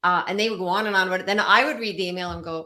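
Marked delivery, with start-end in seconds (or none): none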